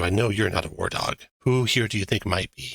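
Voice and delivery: hushed whisper. Narrator voicing a character who comes over and whispers to you, whispering. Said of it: "he whispers to you".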